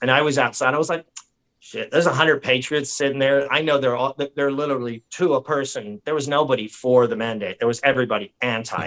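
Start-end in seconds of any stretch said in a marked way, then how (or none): none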